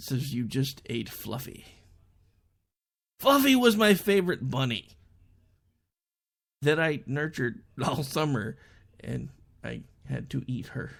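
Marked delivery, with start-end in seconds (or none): 0.3-1.6 quiet deadpan delivery without any pause before speaking. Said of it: "without skipping a beat".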